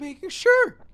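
voice cracking. Reading a letter aloud while the co-host interrupts: voice cracking. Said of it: "That voice crack was really bad".

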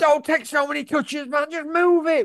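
high, far-off, frustrated exasperated voice.

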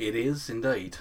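Australian accent, half-slipping and cracking. Answering a question, accidentally slipping into a cracked australian accent. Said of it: "that kind of crack Australian accent".

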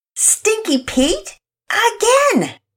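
forceful, emphatic, insistent delivery. A card player reacts to losing again to her opponent: emphatic. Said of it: "Penelope was even more emphatic this time".

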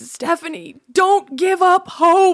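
very high, loud, slow grandpa bellow. Retelling what a man said to her in a receiving line, in a loud hearing-aid grandpa voice. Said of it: "the hearing aid grandpa voice".

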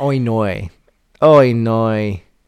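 New Zealand accent. Trying out the accent right after being told how New Zealanders sound, New Zealand accent. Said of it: "New Zealanders are more like".

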